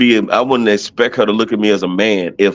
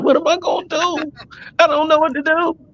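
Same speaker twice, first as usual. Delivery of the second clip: mock high-pitched, tearful blubbering; 3 dB quieter than usual. Joking about being helpless when the power goes out: mock crying. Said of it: "I'm sitting here crying".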